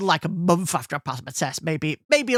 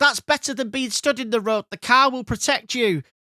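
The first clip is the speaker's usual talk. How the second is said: high, mild, half-yelled voice; 6 semitones higher than usual. Retelling an argument during a breakdown in a flooded road: imitating someone screaming. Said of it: "she's screaming at him".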